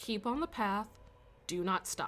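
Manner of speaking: soft, hushed murmur under the breath. Game master voices Meg speaking to the party behind her, Meg's hushed voice. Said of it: "say in a hushed voice to you guys".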